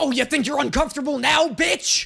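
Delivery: lecherous horror-villain voice. Acting out someone crawling over a table: overly horny Freddy Krueger voice. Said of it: "like a fucking overly horny Freddy Krueger".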